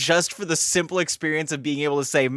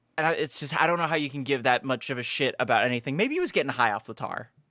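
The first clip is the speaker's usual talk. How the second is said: plain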